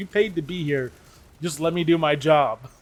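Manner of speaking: put-on thick South Carolina Southern accent. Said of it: "pretty thick accent".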